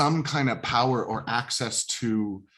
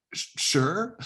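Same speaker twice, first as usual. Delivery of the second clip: sure rising like a question; 7 semitones higher than usual. Acting out how she answers an invitation, 'sure' rising like a question. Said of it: "it'll almost sound like a question".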